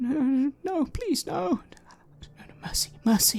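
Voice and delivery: very high-pitched, whimpering, begging tone. Narrating a scene to a player, the narrator voices unseen people whimpering and pleading. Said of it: "There are people whimpering and saying".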